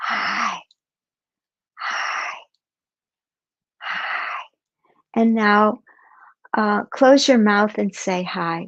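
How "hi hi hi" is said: soft, breathy, barely voiced whisper. Demonstrating for learners how to whisper hi: whispering. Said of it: "let's whisper hi".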